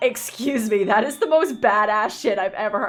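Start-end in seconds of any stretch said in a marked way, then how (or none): none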